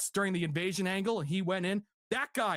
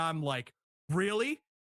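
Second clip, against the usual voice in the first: usual speaking voice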